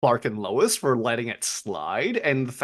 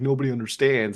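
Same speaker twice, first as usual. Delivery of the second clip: normal talking voice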